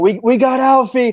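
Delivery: very high shout, stretched long. Running toward a teammate in the game scene: shouting.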